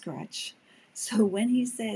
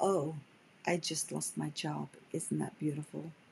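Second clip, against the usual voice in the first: heavily sarcastic delivery; 5 semitones lower, 5 dB quieter than usual. Giving examples of beautiful meant sarcastically: imitating sarcastic tone. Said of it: "means it sarcastically".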